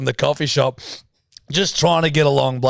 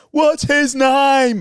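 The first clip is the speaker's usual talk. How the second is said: very high, excited, acted-out shrieking yell; 11 semitones higher, 3 dB louder than usual. Retelling a woman on the street yelling about a dog: imitating a woman yelling. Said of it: "And she's yelling".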